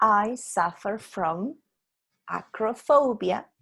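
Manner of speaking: plain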